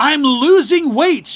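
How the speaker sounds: furious, shrill, loud angry yell. Telling of a man complaining about cruise food, the speaker retells his yelling. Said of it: "he started yelling".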